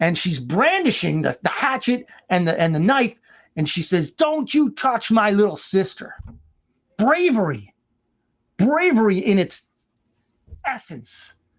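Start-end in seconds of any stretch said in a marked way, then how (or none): 4.1-6.2 mock high, fierce, brave girl's cry. Retelling a girl with a hatchet defending her sister: imitating a girl yelling. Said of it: "she's yelling".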